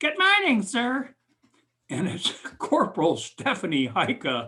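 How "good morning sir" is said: bright, perky, chipper voice, very high and loud. Recalling being greeted while shaving after little sleep, imitating Stephanie Heika's chipper voice. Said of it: "some chipper voice right next to me goes".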